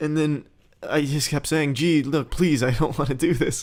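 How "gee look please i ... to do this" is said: earnest, imploring, pleading, begging tone. Retelling begging a friend not to make him do this: imitating own begging. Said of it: "I was fucking begging him".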